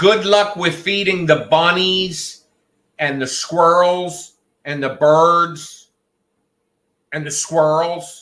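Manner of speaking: shouting. Talking to a roommate about feeding the animals, yelling. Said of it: "Why are you yelling?".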